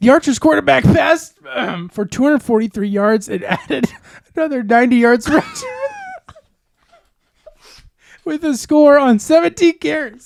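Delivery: very high, loud, broken by stifled laughter. Reading out a quarterback's stats, trying not to laugh: laughing while talking. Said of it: "I'm trying not to laugh, and it's making me cry".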